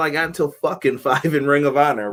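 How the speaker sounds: ordinary talk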